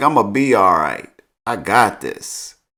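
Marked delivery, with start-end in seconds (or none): none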